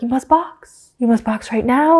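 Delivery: put-on calm radio-style voice with European accent. Podcast host retelling the team radio call telling a driver to box, put-on european accent. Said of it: "like this like European accent".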